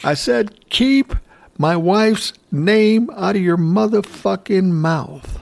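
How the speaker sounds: mock high yell. Retelling the exchange after a G.I. Jane joke, quoting the reply: imitating Will Smith yelling. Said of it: "Will Smith yells louder".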